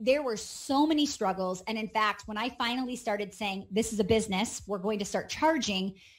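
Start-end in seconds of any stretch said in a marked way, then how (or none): none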